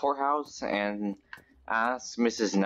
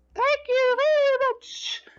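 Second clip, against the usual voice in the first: pitch raised way up, words stretched out; 5 dB louder than usual. Voicing a kid's line of thanks: Mickey Mouse voice. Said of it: "I sound a lot like Mickey Mouse".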